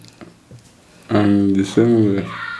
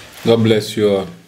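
ordinary talk

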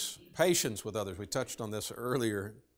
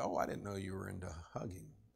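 mock sarcastic tone, quieter; 3 semitones lower, 8 dB quieter than usual. Recounting what they said this morning when someone went for a hug, retelling a sarcastic remark. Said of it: "I sarcastically said".

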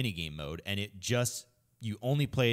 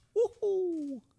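cartoonish woohoo whoop rising very high. Asked for the best Mario noise: Mario voice. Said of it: "your best, like, m-, like, Mario noise".

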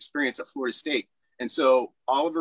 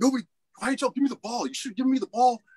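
mock, very high-pitched, angry shouting; 9 semitones higher than usual. After the state final game, retelling how a teammate yelled, imitating Tree yelling angrily. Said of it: "And he started yelling at me".

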